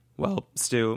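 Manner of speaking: voice cracking. Turning to wrap up the episode with the co-host, voice cracking. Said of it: "you hear my voice crack?".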